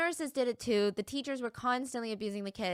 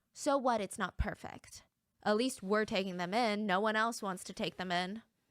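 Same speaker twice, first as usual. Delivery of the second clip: ordinary delivery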